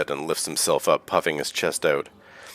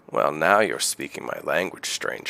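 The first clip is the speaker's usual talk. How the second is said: drily wry delivery. Narrator voicing a captain answering a stranger's offer of adventure, wry, as Hookfeather. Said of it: "He looks at you wryly".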